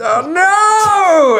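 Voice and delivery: dismayed outcry, high and loud.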